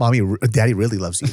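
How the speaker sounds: plain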